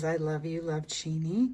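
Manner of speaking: ordinary talk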